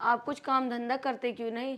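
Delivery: ordinary delivery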